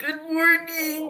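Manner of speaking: put-on elderly man's voice. Voicing the carriage driver, an old man, greeting a player: old man voice. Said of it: "he's like an old man".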